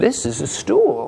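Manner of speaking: put-on high-pitched, slow baby-talk voice. Showing how to talk to a baby: higher-pitched voice. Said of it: "using the higher pitched voice, like uh".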